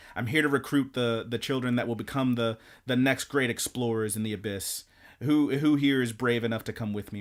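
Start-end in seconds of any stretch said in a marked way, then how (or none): none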